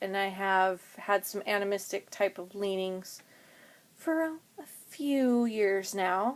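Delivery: sarcastic, understated delivery.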